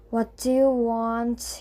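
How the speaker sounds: bored, uninterested, low, slow grumble. An innkeeper comes over to guests at the counter: low, bored voice. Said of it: "He said in a low, bored voice".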